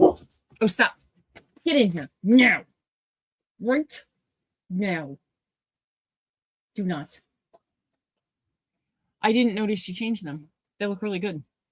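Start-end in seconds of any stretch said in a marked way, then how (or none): 0.0-7.2 loud, deliberate yelling. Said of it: "I'm yelling at Parker".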